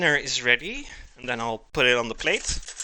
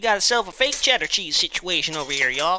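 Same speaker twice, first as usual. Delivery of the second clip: rough put-on Texas accent, higher pitched; 5 semitones higher than usual. Addressing viewers, in a texas accent. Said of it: "How do you guys like my Texas accent?".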